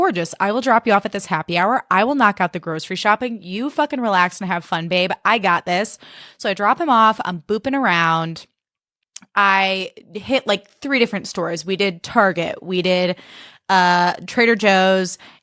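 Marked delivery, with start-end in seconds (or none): none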